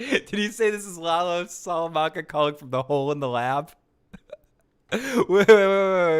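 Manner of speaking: speaking through laughter. Reacting live to a prank caller on stream and checking what was said, laughing while talking. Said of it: "I'm laughing too much".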